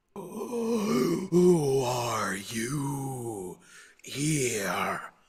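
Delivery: very slow, drawn-out, ghostly voice.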